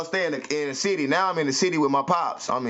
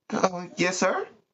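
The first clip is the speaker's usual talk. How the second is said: small, light voice; 3 semitones higher than usual. Retelling answering a man who calls him son: little light voice. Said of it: "I got that little light voice".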